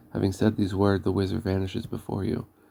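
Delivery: ordinary delivery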